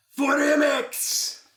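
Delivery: piercing, very high, very loud shrieked cry. Voicing a hidden voice behind a barrel as it attacks: screaming out. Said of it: "you hear a voice scream out from behind the barrel".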